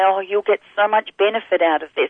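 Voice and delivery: plain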